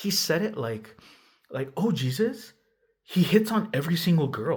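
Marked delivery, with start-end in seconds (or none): 1.8-4.6 high-pitched exclamation, blurted out unfiltered. Retelling what he said about the speaker: imitating a blurted remark. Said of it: "the way he blurted it out".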